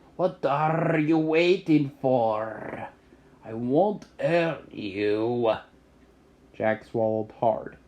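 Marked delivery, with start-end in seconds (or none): 0.2-5.6 growling wolf voice, with "for" drawn out. Narrating a story, the speaker reads the wolf's words to the boy, growling. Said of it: "he growled".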